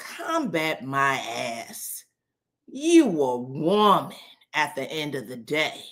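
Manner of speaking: put-on nastiest tone, dragged out very slowly. Retelling a reality show scene where he snaps back at her: imitating a nasty tone. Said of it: "he says in the nastiest tone".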